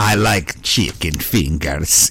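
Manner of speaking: dramatic Greek accent, very low and slow. Joking with another speaker about how greek people say everything, in a greek accent like a curse.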